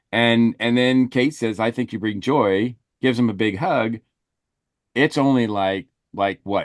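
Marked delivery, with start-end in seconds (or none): none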